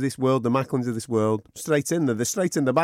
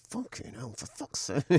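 breathy, whispered muttering; 8 dB quieter than usual. Retelling repeated remarks after being bumped into: imitating muttering under breath. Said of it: "I kept saying under my breath".

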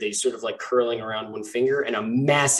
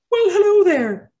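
very high, very loud, high-pitched squeaky voice; 8 dB louder than usual. From the back of a shop, a voice calls out in a high-pitched squeaky voice. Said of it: "you hear a high-pitched voice squeak up and go".

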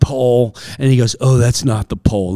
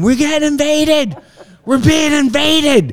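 put-on very high-pitched, frantic, panicked shriek. Recalling hearing people marching his way and running to hide: re-enacting own screaming.

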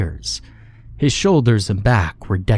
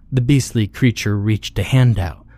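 plain reading voice

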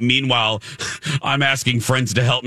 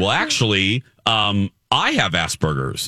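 ordinary talk

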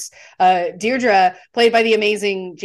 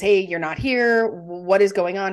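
ordinary talk

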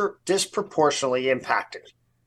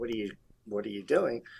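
muttered under breath, much quieter; 5 semitones lower, 9 dB quieter than usual. Showing what he says about people driving alone in masks, under his breath. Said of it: "I talk under my breath".

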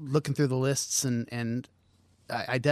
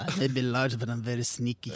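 horrible fake Russian accent. Sneaking up on the others, who ask if he was spying; horrible fake russian accent. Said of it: "it's a horrible Russian accent".

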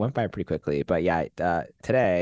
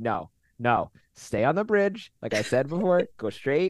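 mock firm, no-nonsense, high and stern; 6 semitones higher than usual. Speaker acts out their own earlier instruction, retelling being stern. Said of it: "I had to like be stern".

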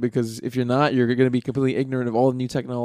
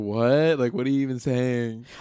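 put-on snarky thirteen-year-old voice, super sarcastic. Imagining a thirteen-year-old podcast guest answering: imitating a super sarcastic teen. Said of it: "They would just be super sarcastic and be like".

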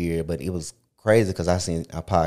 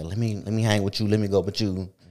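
mock pleading like a kid, pitched higher; 3 semitones higher than usual. Retelling how they begged an older cousin as a kid, retelling pleading.

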